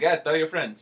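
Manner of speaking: put-on loud Mexican accent. Speaker imitates a guy at work and his catchphrase, in a mexican accent. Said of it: "so he says in the Mexican accent".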